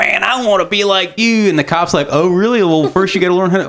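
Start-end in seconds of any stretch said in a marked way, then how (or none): 0.0-1.5 put-on slow, boozy, drunk old-man voice. Speaker retelling an old drunk talking to a cop, imitating an old drunk. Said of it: "some old drunk is like".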